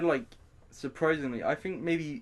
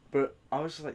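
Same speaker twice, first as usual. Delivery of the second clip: usual speaking voice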